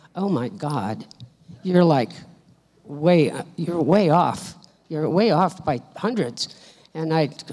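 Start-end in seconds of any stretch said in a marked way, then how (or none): 0.2-6.6 low, private mutter under the breath, to oneself. Retelling a helper in the kitchen checking the checkbook: imitating someone muttering to herself. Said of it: "muttering to herself".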